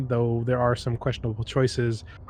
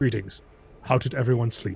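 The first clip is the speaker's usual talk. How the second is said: strange, odd, artificial, synthetic android voice. Voicing the android D J greeting the crew: strange android voice. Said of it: "in his strange voice says".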